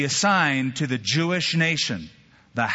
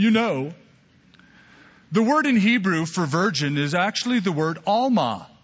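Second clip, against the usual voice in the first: condescending, know-it-all tone, talking down; 4 semitones higher than usual. Quoting what deniers say about the Hebrew word, in a mock I'm-smarter-than-you tone. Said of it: "sort of "I'm smarter than you" tones".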